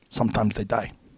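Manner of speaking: put-on thick Korean accent. Retelling the reply of a man who trained troops in Vietnam, thick Korean accent. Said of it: "with his thick Korean accent".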